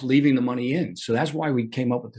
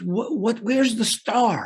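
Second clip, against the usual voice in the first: put-on Israeli accent; 9 semitones higher than usual. Speaker quotes a seller from Israel replying to him, heavy Israeli accent. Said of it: "he very heavy accent".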